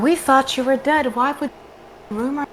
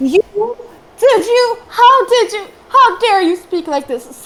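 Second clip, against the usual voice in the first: overlapping shrill, scandalized, outraged crowd shouting; 7 semitones higher, 8 dB louder than usual. Game master voices townsfolk angry at an insult to their priestess: outraged townsfolk yelling. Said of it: "Different townsfolk start yelling, / Several different voices coming from different sides, almost like barking dogs. Different townsfolk start yelling, screaming. / Different townsfolk start yelling".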